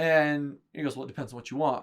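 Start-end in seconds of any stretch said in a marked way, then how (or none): 1.0-1.8 mock rude, unfriendly, curt, dismissive tone. Retelling a salesman's curt reply: imitating a rude tone. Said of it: "But he's not saying it nicely".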